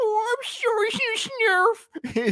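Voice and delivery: high, squeaky, slow, scared creature voice. Showing how a cartoon character reacted when Lionel scolded him, mock-scared Snarf voice. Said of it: "So that's how he that's how he spoke".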